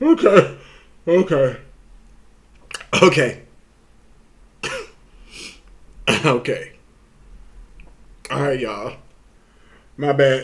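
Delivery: speech broken by laughter. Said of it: "I can't stop laughing".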